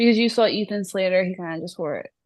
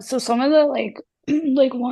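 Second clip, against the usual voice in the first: voice briefly dropping away, pitched up; 6 semitones higher, 4 dB louder than usual. Speaker chatting about outfits with another speaker: voice cutting out. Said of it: "I just lost my voice for a second".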